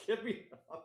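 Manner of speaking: flustered, very high-pitched blurt. Retelling a movie scene on a camel: imitating flustered Cuba Gooding Jr. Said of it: "and he's just flustered".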